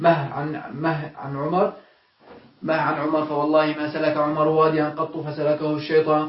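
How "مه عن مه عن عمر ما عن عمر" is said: plain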